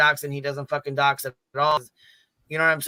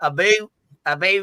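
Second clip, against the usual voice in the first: very slow put-on Canadian accent, stretched vowels; 4 semitones higher, 4 dB louder than usual. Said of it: "I sound like a Canadian".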